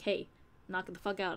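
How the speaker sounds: usual speaking voice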